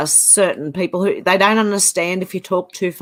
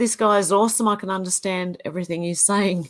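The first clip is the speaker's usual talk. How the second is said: ordinary delivery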